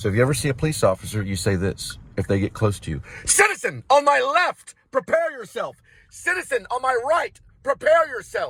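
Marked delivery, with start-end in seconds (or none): 3.3-8.5 very high, loud, shrill, forceful yell. Speaker shows what to say when a police officer comes close, yelled. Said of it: "You don't have to yell it like that".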